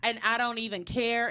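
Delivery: plain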